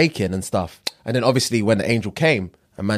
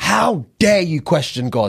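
mock-screaming, much higher; 6 semitones higher than usual. Retelling how she screamed in a man's face, retelling a scream. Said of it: "Screaming at his fucking face".

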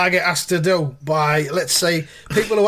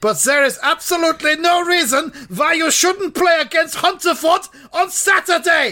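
pitched-up, loud, full-out shout; 10 semitones higher than usual. Reading a letter aloud, a line in bold text shouted. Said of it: "I shouted that because it was in bold text".

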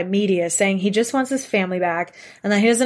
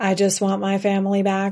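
emotionless, machine-like, flat robotic monotone. Mocking how someone delivers lines about his missing family: imitating flat, robotic delivery. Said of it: "not like a fucking robot. Like".

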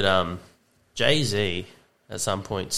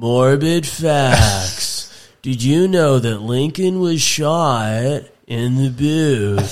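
grating, annoying high narrator drone, very slow and drawn out; 5 semitones higher, 8 dB louder than usual. Imitating the narrator of an Instagram facts page: imitating an annoying Morbid Facts voice. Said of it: "one of those guys who has an annoying voice".

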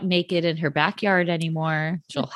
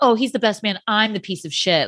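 passive-aggressive, backhanded tone; 3 semitones higher than usual. Imitating Joe Gorga while discussing him: imitating Joe Gorga being passive aggressive. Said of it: "passive aggressive".

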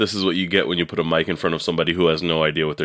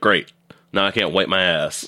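ordinary delivery

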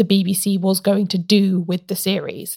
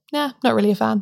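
mock dead-level, offhand, dismissive deadpan. Retelling a sketch where she looks at the camera: imitating a deadpan reply. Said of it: "deadpan that".

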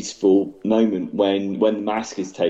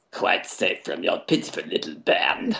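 whispered, relishing villain voice; 2 semitones lower, 4 dB quieter than usual. Quoting a film villain's line with relish: Palpatine impression. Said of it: "It's a good impression".

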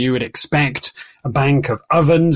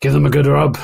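put-on Scottish accent. Voicing a tabaxi character in a game: put-on scottish accent. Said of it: "she's Scottish again".

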